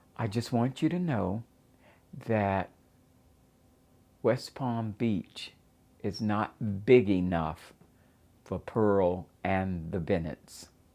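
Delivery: normal talking voice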